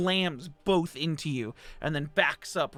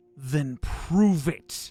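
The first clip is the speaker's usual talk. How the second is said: loud voice ringing out, echoing all around; 5 dB louder than usual. A narrator voices the giant red eye's reply to the player's character, echoing voice. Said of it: "you hear a voice echo just around the whole space say".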